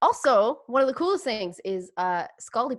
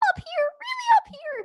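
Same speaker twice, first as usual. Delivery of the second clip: very high, very slow, drawn-out natural voice. Imitating how another speaker's real voice sounds: imitating Ryan's high real voice. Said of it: "Ryan's real voice is just like".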